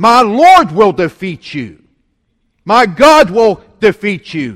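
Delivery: loud, slow, defiant yell.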